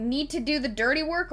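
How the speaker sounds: ordinary delivery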